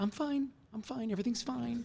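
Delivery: voice jumping very high, dismissive. Mimicking people who insist they're fine, imitating a voice jumping high. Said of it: "your voice just went up four octaves".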